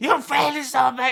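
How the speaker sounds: all-out shrill scream, very high and very loud. Retelling what a man on a show said to a failing contestant, imitating someone screaming. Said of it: "he's screaming".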